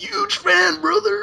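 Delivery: very high, rough wrestler voice. Asked for the Hulk Hogan voice again, reading a fan's message: Hulk Hogan voice. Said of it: "Can you do your Hulk Hogan voice for me again?".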